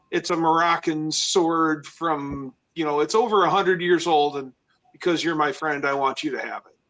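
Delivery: ordinary delivery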